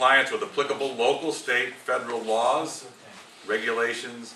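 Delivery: plain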